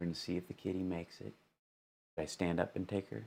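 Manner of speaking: very quiet, hushed, under-the-breath voice. Speaker lowering voice as a kitten is brought in, speaking very quietly. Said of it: "I'm going to speak very quietly".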